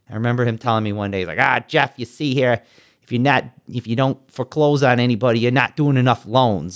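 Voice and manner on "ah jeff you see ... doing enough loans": put-on old-time thirties gangster voice. Retelling what the bank's foreclosure head told him one day: imitating Chuck's gangster talk. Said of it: "talked like a 1930s gangster".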